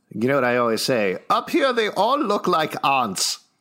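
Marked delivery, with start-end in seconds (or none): 1.3-3.3 put-on German accent. Speaker quotes a movie line, putting on an accent. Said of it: "with that accent you were putting it on there".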